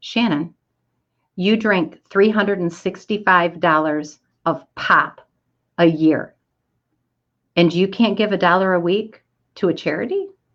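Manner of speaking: ordinary talk, nothing marked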